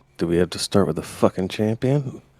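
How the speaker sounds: soft, sidelong, under-the-breath muttered aside. Playing a character who peeks over at Jam: muttering under breath in character. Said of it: "under my breath is like".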